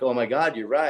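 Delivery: ordinary talk, nothing marked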